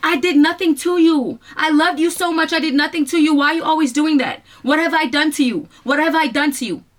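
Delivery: play-acted high-pitched screaming. Retelling what she screamed on the phone: retelling her own screaming. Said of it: "you know what I was screaming?".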